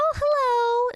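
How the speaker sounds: put-on gushing baby talk, high, loud, sing-song.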